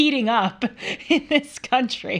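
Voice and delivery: words breaking into laughter. A show host delivering a joke to the audience, laughing while speaking. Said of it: "I'm laughing preemptively at my joke".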